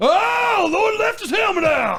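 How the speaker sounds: very high, stretched-out, drawn-out yell. Telling a story about a missing helmet, the speaker mimics the coach: retelling the coach's yell. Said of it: "come around the corner and yell".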